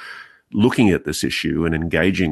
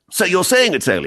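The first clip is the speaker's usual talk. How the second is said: high, rapid, mocking put-on English accent; 13 semitones higher, 4 dB louder than usual. Retelling an English colleague's question, in a mocking English accent. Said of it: "take the piss out of my Pommy colleagues".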